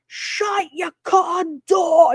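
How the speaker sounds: mock full-on scream, high and drawn-out. Retelling what a man yelled at another guy: imitating someone screaming. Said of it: "He starts screaming".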